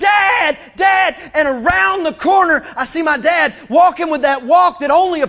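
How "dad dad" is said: high-pitched, calling-out scream. Retelling being lost and calling out for their dad, retelling a scream. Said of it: "I'm screaming".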